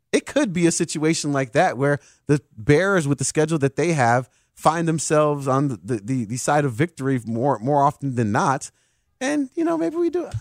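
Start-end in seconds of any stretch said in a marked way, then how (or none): 9.2-10.2 very high, pitched-up voice. Talking yourself into the team's chances of winning: high-pitched voice. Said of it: "I heard the high-pitched voice".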